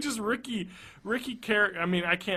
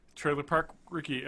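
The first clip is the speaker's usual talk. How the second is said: ordinary delivery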